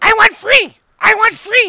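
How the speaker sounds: high, shrill, shrieking, frantic panicked creature yell. The game master voices a kobold that wants to be free, at the end of its turn, yelling. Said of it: "he's yelling".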